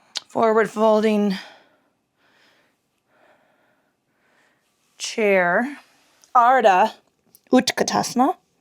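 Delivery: heavy, labored, breathless breathing. Leading a yoga flow while fighting asthma: heavy labored breathing. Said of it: "Darth Vader-y because I'm fighting my asthma".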